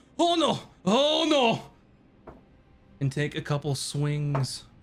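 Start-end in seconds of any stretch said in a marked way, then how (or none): 0.2-1.6 stretched-out, very high panicked cry. Voicing an unseen figure in the dark who starts to yell: yelling. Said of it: "you hear someone begin to yell".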